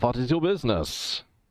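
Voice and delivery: put-on, clumsy-sounding, bad German accent. Voicing the guard at the overseer's office in a dice game, in a bad german accent. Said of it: "He says in his bad German accent".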